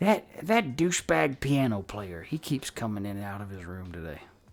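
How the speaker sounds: voice briefly dropped low and hushed. Voicing a character leaning in to share gossip: lowered voice. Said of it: "he lowers his voice for a second".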